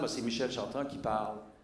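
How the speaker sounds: ordinary talk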